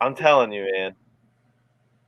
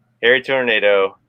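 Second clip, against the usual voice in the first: plain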